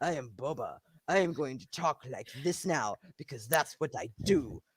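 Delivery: very low, very quiet, dead-serious deadpan murmur. Speaker imitates how Boba Fett talks in the show, doing a serious Boba Fett impression. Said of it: "And he's like so serious".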